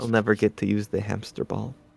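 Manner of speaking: soft, grumbling mutter under the breath. A player's character, told to protect the others, mutters: muttering under breath. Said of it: "I just mutter under my breath".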